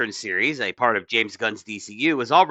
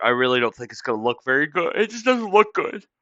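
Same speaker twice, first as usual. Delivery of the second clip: words pushed out mid-yawn. Giving an opinion on a show after little sleep, yawning while talking. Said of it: "I'm sorry I'm yawning".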